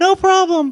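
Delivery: voice pitched way up, cartoon high. Retelling what a Thor cosplayer said after a photo: high Mickey Mouse voice. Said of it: "So he had a high Mickey Mouse voice".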